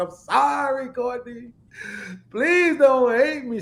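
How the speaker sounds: very high, sobbing, crying voice. Retelling breaking down while holding the baby: retelling a crying apology. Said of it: "started crying like a baby".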